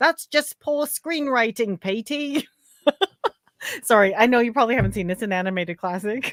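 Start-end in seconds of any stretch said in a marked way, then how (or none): 0.0-2.5 bad put-on British accent, pitched up. Repeating a film quote after naming its source, poor british accent. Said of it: "is that your poor British accent?".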